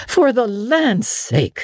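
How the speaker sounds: gasping. Hurrying from the room after the child throws herself on the bed, gasping. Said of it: "gasped Marilla".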